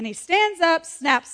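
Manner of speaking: ordinary talk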